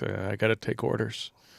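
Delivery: soft, lost mumble, quietly under the breath. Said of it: "he mumbles under his breath constantly with a hot mic".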